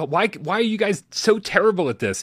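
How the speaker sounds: put-on very high, shrill screaming. Retelling screaming at players on TV: imitating own screaming. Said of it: "I'm screaming all these questions".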